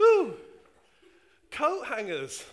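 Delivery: bursting with excitement, very loud, swooping, put-on. Retelling a man stopping suddenly in a shop aisle: imitating an excited man. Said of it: "His ooh was so much more excited".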